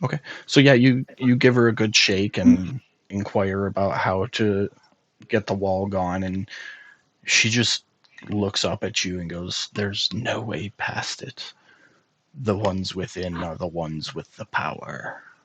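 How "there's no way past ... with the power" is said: soft, alluring, tempting, seductive demon voice. Narrator voices a woman on her knees answering the players, in a seductive demon voice. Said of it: "It's my best demon voice".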